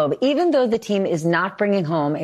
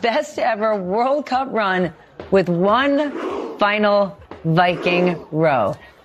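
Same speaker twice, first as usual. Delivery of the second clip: moved, choked-up voice, words drawn out. Show host closing the broadcast on the team's celebration: choked up. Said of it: "I'm getting choked up".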